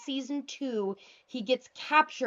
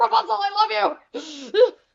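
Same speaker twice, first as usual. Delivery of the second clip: mock wonderstruck, very high, slow and drawn out; 11 semitones higher, 9 dB louder than usual. Recounting a scene where he speaks to Rapunzel, imitating Flynn Rider in awe. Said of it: "just like in awe".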